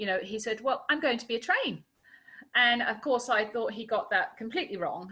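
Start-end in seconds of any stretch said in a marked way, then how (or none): 0.6-1.8 put-on child voice, clipped English, much higher. Parent retelling asking young Ollie what he wants to be: Ollie's clipped English accent. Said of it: "in this perfect little clipped English accent".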